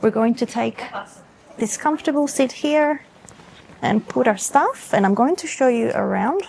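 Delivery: quiet, soft, hushed half-whisper. Showing viewers around while waiting, not wanting to bother other people, half-whispering. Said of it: "So I am whispering".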